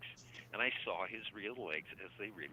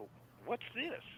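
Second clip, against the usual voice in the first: put-on very high, bright, cheerful voice; 14 semitones higher than usual. Retelling what a visitor asked about a CD: imitating a very cheerful voice. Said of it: "In a, a very cheerful way".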